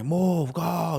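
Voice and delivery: put-on high, furious, angry screaming. Retelling the father's road rage while driving: imitating dad screaming. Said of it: "he'd be, like, screaming".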